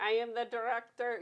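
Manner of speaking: slow put-on German accent, words spaced out. Showing how he does introductions, in a put-on German accent. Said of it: "in like my German voice".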